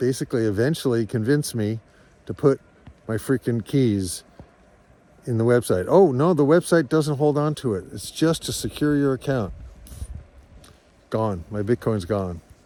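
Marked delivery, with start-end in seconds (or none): none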